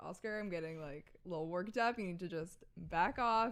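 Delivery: ordinary delivery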